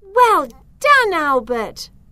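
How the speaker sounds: proud cheering exclamation. A girl cheers on a friend after his mud pie hits the fox, crying out proudly. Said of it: "Cried Zoe proudly".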